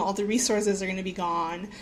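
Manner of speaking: plain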